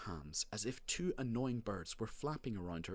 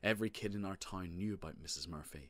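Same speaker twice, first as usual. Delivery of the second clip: ordinary delivery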